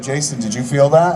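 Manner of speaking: ordinary talk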